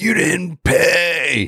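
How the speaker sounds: high, slow, drawn-out scream. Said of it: "this guy comes running out screaming at me".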